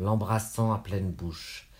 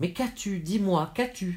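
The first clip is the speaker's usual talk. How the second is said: very high, frantic, distraught begging voice; 10 semitones higher than usual. Reading a story, the narrator questions a groaning woman: distraught asking. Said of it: "Je demandai, éperdue".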